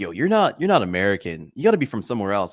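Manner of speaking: ordinary delivery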